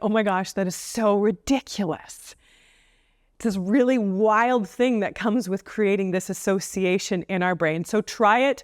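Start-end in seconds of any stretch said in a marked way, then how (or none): none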